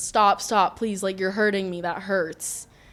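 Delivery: acted, tearful, crying, begging voice. Recounting her boyfriend hurting her, she reenacts her pleas in a retold tearful plea. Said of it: "I just remember looking at him and I'm crying".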